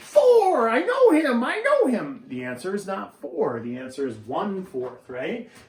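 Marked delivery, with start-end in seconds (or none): 0.0-2.2 very high, very loud, shrill, giddy, drawn-out squeal. Acting out how a brain wrongly jumps to an answer: imitating excited yelling like Buddy the Elf. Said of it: "people's brains do that".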